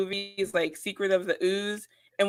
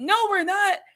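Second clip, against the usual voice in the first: put-on wrestler-style yelling, higher-pitched; 11 semitones higher, 3 dB louder than usual. Retelling how Bayley yells at a commentator: imitating Bayley yelling. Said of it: "She's just yelling at him".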